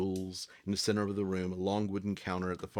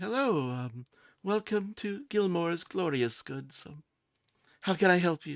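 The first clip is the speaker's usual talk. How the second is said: very high, mousy voice; 10 semitones higher than usual. A half-elf woman greets customers at Gilmore's Glorious Goods, mousy Sherry voice. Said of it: "kind of mousy".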